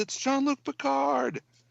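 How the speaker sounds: put-on high, creaky girl's voice calling out.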